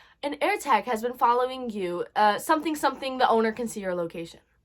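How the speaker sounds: normal talking voice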